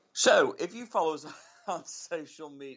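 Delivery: words breaking up, laughing through them. Introducing the show's friday fun segment, unable to keep a straight face: laughing while talking. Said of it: "I can't do it without laughing".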